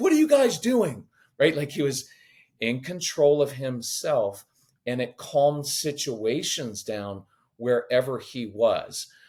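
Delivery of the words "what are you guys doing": frantic, shrill, very high, rushed, panicked freak-out. Showing how Jesus never reacted to situations, imitating someone freaking out. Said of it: "freaking out".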